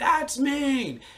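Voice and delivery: very high shriek. Retelling shouting at people who ran away from him, retelling a scream. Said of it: "I screamed".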